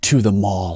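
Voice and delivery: put-on whisper. Retelling a student's reply to a question in class: imitating a whisper. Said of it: "this young lady whispered".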